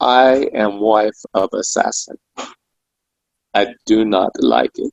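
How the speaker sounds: mock-sad, hushed, quiet delivery. Retelling a woman's reply after being told she wasn't taped, retelling a sad, quiet voice. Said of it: "in this this sad, quiet voice".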